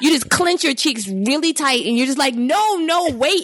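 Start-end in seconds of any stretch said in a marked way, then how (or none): 2.3-3.4 screaming, much higher pitch. Retelling an experience they did not like, retelling a scream. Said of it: "and I'm just screaming like".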